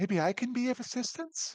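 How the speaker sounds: gentle, very high-pitched voice. A voice suddenly heard aboard a ship, speaking in a soft voice. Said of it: "you hear a soft voice".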